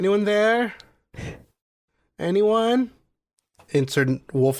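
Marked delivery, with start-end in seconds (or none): 0.0-2.9 lonely, high-pitched calling out. Acting out someone dying alone in the wilderness, calling out. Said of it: "mime someone dying alone in the wilderness".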